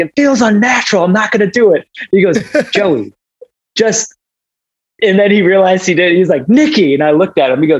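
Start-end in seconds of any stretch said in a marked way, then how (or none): 0.0-1.9 mock furious, high, screaming outburst. Retelling the moment she answered the man asking her to go higher, retelling a scream. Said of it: "I just screamed at him like".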